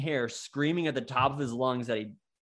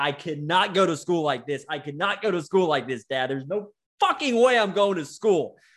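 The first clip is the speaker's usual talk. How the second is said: loud, wailing, bawling in a full crying fit; 4 semitones higher, 5 dB louder than usual. Retelling a breakdown in the car with dad: imitating own past bawling. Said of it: "I just started bawling".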